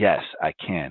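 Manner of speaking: plain, sure, matter-of-fact delivery. Retelling an interview answer about playing in the NBA: imitating a matter-of-fact answer. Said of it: "he says it, like, so matter of fact".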